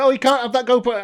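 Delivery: acted high-pitched shout. Retelling someone at a visitor centre forbidding a GoPro: imitating someone shouting. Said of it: "someone else is shouting".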